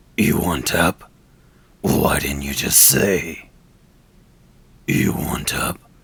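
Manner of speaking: loud, low, rough gravelly voice. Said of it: "these type of low gravelly voices".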